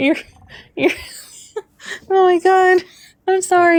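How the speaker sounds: high-pitched, laughing through the words. Reacting to another speaker's joke about a match, laughing hard while talking. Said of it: "I don't know why that made me laugh so hard".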